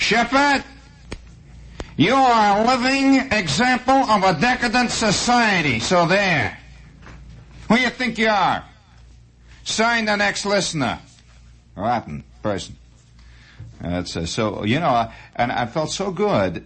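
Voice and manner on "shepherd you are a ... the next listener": put-on Bronx accent, very high. Reading aloud a listener's insulting letter in the writer's voice, Bronx accent. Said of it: "the guy was from the Bronx".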